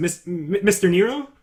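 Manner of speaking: timid, sheepish voice. Voicing a minor guard greeting the player's character, meek and sheepish. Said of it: "he's kind of meek and sheepy".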